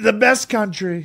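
very high, proclaiming rally-stage voice. Teaching another how to do it: Donald Trump rally voice. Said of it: "the easiest way to do Trump".

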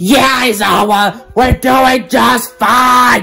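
shouting loudly, screaming. Calling back to Aizawa in a skit: screaming. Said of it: "Don't need to scream".

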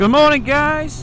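very loud, very high shout. Greeting everyone one morning over noise in the helmet: shouting. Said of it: "Sorry for shouting".

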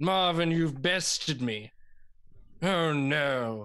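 posh, snobby, high and mighty voice. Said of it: "Snobby. Very high and mighty".

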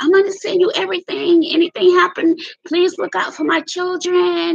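tearful, crying, begging in a very high voice. Retelling a phone call to him after horrendous news, acting out crying and pleading. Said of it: "I called him crying and screaming".

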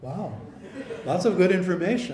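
dumb, dim-witted, dopey dum-dum character voice. Playing a listener reacting to Pastor Bill's teaching, in a dum-dum voice. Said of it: "That's my dum-dum voice".

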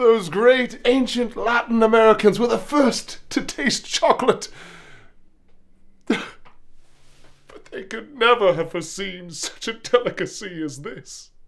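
tearful, breaking voice. After being told he's freaking someone out, he answers crying, voice breaking. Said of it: "Are you crying?".

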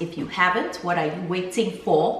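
breaking into Nigerian English accent. Host asking viewers to subscribe, breaking into a nigerian accent. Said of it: "As I break into my Nigerian accent".

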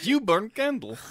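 very high Russian accent with articles dropped. Reading a beer sponsor spot with co-hosts, Red Guardian impression. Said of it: "I sound like Red Guardian".

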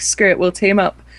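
ordinary talk

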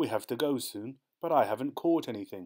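plain reading voice

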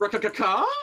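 questioning inflection rising on rakakaka. Planning to step outside and call it, rising question on rakakaka. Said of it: "Get a questioning inflection".

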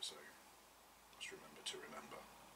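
soft whisper, said to self.

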